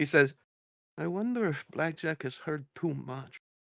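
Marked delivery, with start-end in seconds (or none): 1.0-3.4 under-breath mumble, much quieter. A player voices his character speaking just loud enough for another to hear, mumbled under breath. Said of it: "like it's a mumble under his breath".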